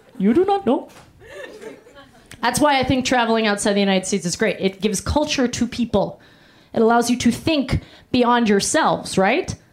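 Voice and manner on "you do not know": high-pitched put-on Pakistani accent. Retelling what a woman said about suing: put-on Pakistani accent. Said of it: "It was for sure Pakistani".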